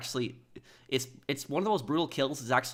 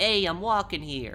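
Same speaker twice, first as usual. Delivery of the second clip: high, put-on New York street accent; 6 semitones higher than usual. Correcting an accent demo, the speaker redoes the line in a New Yorker accent. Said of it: "it's more a New Yorker accent".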